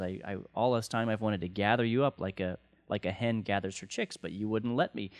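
ordinary talk

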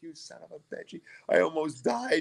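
mock cursing, screaming outburst. Recalling nearly drowning at the pool bottom, retelling screaming at the one who pulled them up. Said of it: "I'm just screaming at him".

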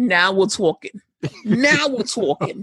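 put-on New York accent, done for effect. Reacting to hearing of a raised per-episode fee, in a New York accent. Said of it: "in my New York accent".

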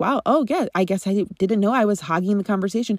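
ordinary talk

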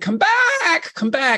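high shout, calling out as across a distance. Retelling calling someone back from a distance: retelling a scream. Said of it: "I screamed out her name".

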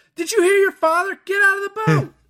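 very high, loud, shrieking scream. Recapping a movie scene, the speaker re-enacts a mother screaming at her kids. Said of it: "she starts screaming at them".

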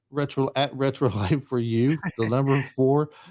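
talking through laughter. Reading out the show's contact handle, laughing while talking. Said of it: "I'm laughing now, and I can't say it".

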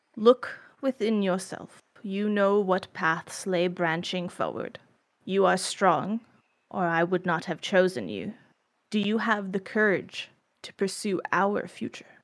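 calm, doubled voice, like two voices at once. The narrator voices the Eidolon reminding the player's character: Overnoza's calm double voice. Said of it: "the calm, double voice of your Eidolon".

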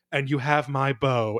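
ordinary talk

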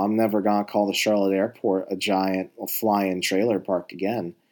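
ordinary talk

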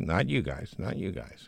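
ordinary delivery

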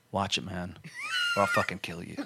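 low, dead-serious, menacing tone. Retelling a threat made to another guy on the first training day: imitating own dead serious threat. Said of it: "looked at him dead serious".

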